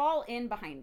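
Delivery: ordinary delivery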